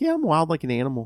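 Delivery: mock nice, calm voice. Retelling how someone on a podcast said a line: imitating a nice and calm delivery. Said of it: "when he said it all nice and calm".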